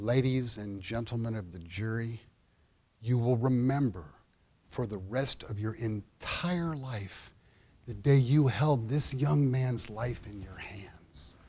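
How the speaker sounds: low, soft voice, each word carefully measured out. The speaker retells walking up to the jury box to address the jury: very deliberate delivery. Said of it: "I said very deliberately".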